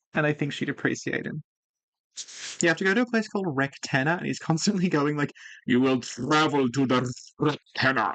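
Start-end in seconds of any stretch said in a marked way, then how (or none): 5.7-8.2 really strong, slow, heavy fake Russian accent. Quoting a guy who gives mission briefings, strong fake Russian accent. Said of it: "really strong fake Russian accent".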